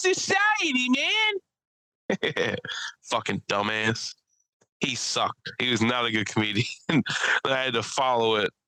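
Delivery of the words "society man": very high, slow, drawn-out cry on society. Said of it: "I said".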